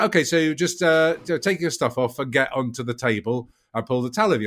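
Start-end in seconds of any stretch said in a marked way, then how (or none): none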